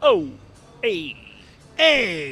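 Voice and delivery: changed-up, loud, swooping, cool-guy greaser voice. Telling how a man hit the jukebox and changed his voice, as a Fonz and Andrew Dice Clay combo. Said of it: "he even changed his voice".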